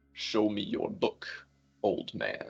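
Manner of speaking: rough, gravelly whisper, very slow and drawn out. Voicing a character's line, trying a gravelly accent: gravelly voice. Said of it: "I'm trying to do like a gravelly Italian accent".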